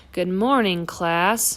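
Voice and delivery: unusually grumpy voice. Reading a picture book aloud, a teacher greets the class: unusually grumpy voice. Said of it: "in an unusually grumpy voice".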